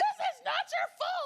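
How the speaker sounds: shrill, full-blast, very loud, high-pitched yelling. Retelling how mom yelled in the car: imitating mom yelling. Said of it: "she starts yelling at me".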